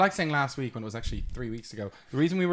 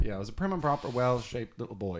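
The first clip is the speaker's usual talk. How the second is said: ordinary talk, nothing marked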